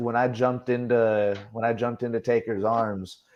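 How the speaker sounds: normal talking voice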